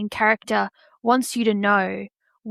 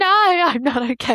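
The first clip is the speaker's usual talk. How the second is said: mock weepy, high, very slow, drawn-out, tearful voice; 7 semitones higher, 4 dB louder than usual. Retelling answering a partner's question while weeping over a sad book scene: imitating own weeping. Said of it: "weeping as I'm eating my dinner".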